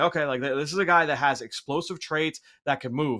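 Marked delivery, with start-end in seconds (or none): none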